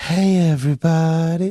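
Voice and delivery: put-on sultry, seductive, sexy female voice. Joking that the show needs voiceover work, trying a mock sexy woman voice. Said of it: "We need some sexy woman voice where it's like".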